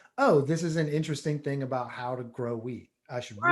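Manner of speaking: usual speaking voice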